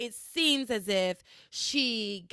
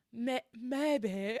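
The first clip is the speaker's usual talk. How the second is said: stumbles clumsily into the words; 2 semitones higher, 4 dB quieter than usual. Recapping a scene, imitating how Tabitha dodges questions: terrible Tabitha impression. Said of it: "I do a terrible Tabitha".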